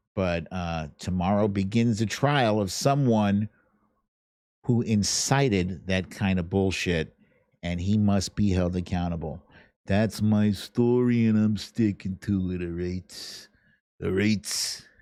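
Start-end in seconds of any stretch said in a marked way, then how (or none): 9.8-14.7 put-on tough guy voice with hard bravado. Host wraps up his remarks about an upcoming trial, in a tough guy voice. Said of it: "That's my tough guy voice".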